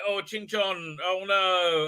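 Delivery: mournful, slow, sad little exclamation of grief. Retelling a scene where a character mourns a dead person: imitating sad Madam Ching. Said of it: "And she's very sad".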